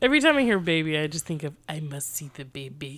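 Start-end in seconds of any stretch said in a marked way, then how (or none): 1.7-3.0 put-on very quiet, old man voice, Russian accent. Joking that every mention of a baby sets off a put-on old russian man accent. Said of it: "I guess I'm some old Russian guy now".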